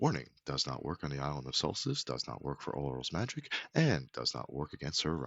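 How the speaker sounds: very faint, barely audible, hushed half-whisper. A narrator voices a disclaimer echoing in your head, very faint half-whisper. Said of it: "small whispered disclaimer then echoes in your head very, very quietly".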